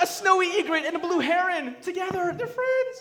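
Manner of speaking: very high-pitched, excited, delighted voice.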